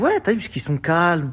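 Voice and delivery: high, loud, excited shout.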